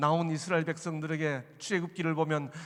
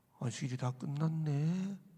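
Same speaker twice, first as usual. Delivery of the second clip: soft, deliberately mournful, put-on sad tone; 2 semitones lower, 6 dB quieter than usual. Father telling his children the Sabbath is over: deliberately sad voice. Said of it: "제가 일부러 목소리를 슬프게 하고".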